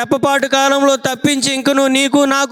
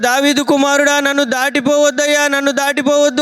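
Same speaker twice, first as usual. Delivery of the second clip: ordinary talk, nothing marked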